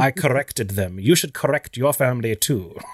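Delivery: clipped British voice with rolled, bold R's. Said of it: "I love his bold R's".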